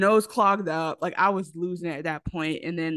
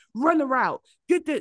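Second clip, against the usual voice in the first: mock, really intense voice, pitched up; 8 semitones higher than usual. Recounting a dad who was intense about his boys' football, imitating an intense dad. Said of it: "he used to be real intense".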